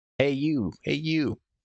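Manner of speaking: put-on shrill, high old woman voice, calling out. Game master narrating as the players near the trees, shrill woman calling out. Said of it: "you hear the voice of a shrill woman calling".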